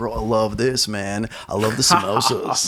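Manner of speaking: slow, laid-back, stretched-out surfer-dude drawl. Imitating a vegan who loves Indian food, in a surfer dude voice. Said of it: "I sound like a surfer".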